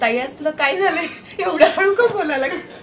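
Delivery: high, loud, laughing, teasing tone.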